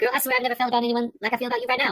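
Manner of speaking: put-on, rapid-fire, quickly rattled-off delivery. Recounting a favorite airline scene, quoting how he talks: imitating a rapid-fire talker. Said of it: "he talks so fast, I can't even".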